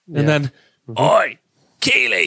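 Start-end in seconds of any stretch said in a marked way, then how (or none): 1.0-2.2 put-on English-accented character voice. Showing what you always say when getting up or sitting down, in a Roy Kent voice. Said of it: "talking like Roy Kent".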